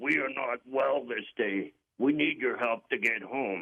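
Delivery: put-on voice speaking from down in the throat. Retelling what a man once said to him: talking out of his throat. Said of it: "He sounded like he was talking out of his throat".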